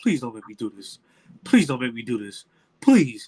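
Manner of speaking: acted, pleading voice on the verge of crying. Retelling a police officer hiding behind a tree, imitating a man about to cry. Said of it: "He done about to cry".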